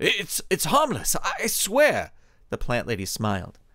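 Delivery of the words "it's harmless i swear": terrified, high, very slow halting stammer. A man faces the plant lady who suddenly terrifies him, stammering. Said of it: "Arthur stammered".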